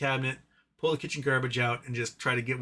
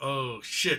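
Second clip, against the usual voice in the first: speaking as a dog. Retelling the dog spotting the speaker on the couch: voicing the dog caught in the act. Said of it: "He's like".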